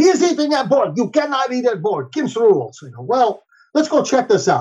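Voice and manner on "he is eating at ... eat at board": put-on Middle European accent. Retelling a player's complaint about his opponent, quoted in a Middle European accent. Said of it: "with a Middle European accent comes up".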